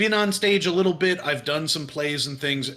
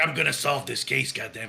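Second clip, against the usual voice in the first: put-on Brooklyn accent, quieter; 3 dB quieter than usual. Improvising a detective at his desk with whiskey and a cigar, Brooklyn accent. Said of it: "I think I was doing kind of maybe Brooklyn".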